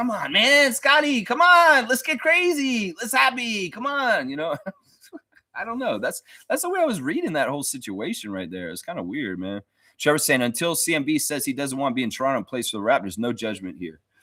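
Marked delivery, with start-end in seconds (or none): 0.0-4.3 very enthusiastic, upbeat, very high, loud, pumped up. Retelling how another guy urged him on, imitating very enthusiastic, upbeat energy. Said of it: "very enthusiastic and happy and just kind of like upbeat".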